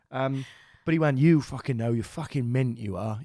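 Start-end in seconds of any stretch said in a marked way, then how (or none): 1.1-3.1 put-on aggressive delivery. Speaker retelling a stranger's remark to them, acting it out mock-aggressively. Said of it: "he said it so aggressively".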